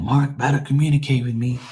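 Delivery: put-on mad, insistent, demanding tone. Ranting about being chased for replies, imitating angry people. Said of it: "People be so mad".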